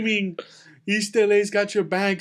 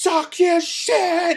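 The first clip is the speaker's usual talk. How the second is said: screaming, higher and louder; 9 semitones higher, 4 dB louder than usual. Retelling a man in the back who kept screaming: imitating someone screaming. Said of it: "he's screaming so much".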